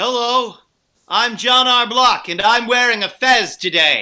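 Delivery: very loud, booming announcing voice. Answering a request to go first with an impression: John R. Block impression. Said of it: "give me your best impression of Ronald Reagan's first Secretary of".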